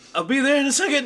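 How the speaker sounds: panicky, tightened shout, very high and very loud. Speaker showing how they delivered a line after hearing someone shouting, panicked, tightened voice. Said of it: "crank up the panic, kind of like tighten your voice".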